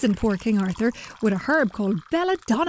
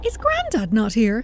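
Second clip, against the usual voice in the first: plain reading voice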